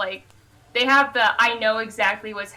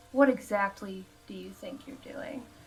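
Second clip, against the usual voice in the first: very hushed, calm and casual, very quiet; 9 dB quieter than usual. A player's character leans on the wall beside a guy and speaks very quietly. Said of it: "very quietly".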